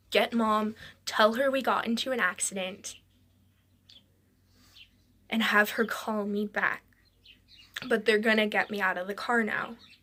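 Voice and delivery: ordinary talk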